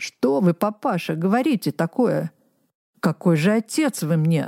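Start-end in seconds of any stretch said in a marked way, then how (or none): none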